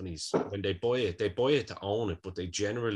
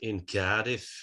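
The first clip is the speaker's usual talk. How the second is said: poor, fake put-on Manchester accent. Meaning to do a Cardiff accent, the speaker slips into a fake Manchester accent. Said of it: "doing a fucking Manchester accent for Cardiff".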